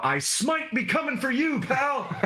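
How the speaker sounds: very high, shrill taunting yell. A player declares what their character yells during a fight, yelling. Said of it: "I'm gonna yell".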